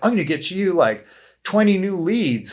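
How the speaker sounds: put-on snide sarcasm. Mocking other consulting companies' advertising: imitating someone sarcastically. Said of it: "I say it, like, sarcastically".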